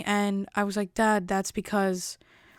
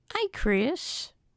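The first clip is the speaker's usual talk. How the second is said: put-on sickly old-man voice, much higher pitch; 5 semitones higher than usual. Speaker imitates the old man from Family Guy greeting Chris, sickly old man from Family Guy. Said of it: "that sickly old man".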